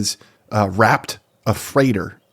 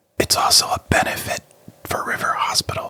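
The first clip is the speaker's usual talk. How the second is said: breathy whisper under the breath. Adding the fine print about a benefit for River Hospital: whispering. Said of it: "I'm gonna whisper the fine print".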